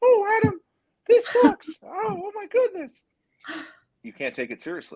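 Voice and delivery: very high, squeaky cartoon voice. Showing a complaint can't be taken seriously: Mickey Mouse voice. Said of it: "say the same thing in the sound and the tonality of Mickey Mouse".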